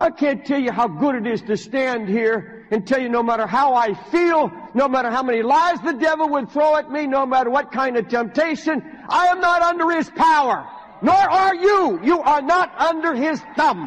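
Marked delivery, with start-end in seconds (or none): 9.1-13.9 all-out, high-pitched screaming. Speaker addressing an audience about the enemy's power, screaming. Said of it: "Forgive me for screaming".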